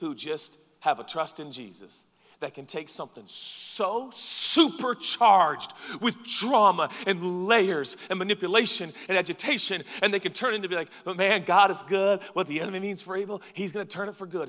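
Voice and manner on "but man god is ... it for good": relentlessly positive, believer tone. Retelling what a calm believer says about a dramatic situation: imitating someone sounding like Joel Osteen. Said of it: "You sound like Joel Osteen so much. Why are you so positive?".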